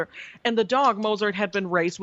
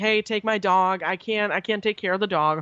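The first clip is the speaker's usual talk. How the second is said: mock crying with a tearful, pleading tone. Retelling a stranger's plea to take his dog: imitating someone crying. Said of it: "This guy starts breaking down".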